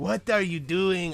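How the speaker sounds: terrible cartoon character voice, missed attempt. Trying the cartoon character's line again: failed Dexter voice. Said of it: "I can't even do him anymore".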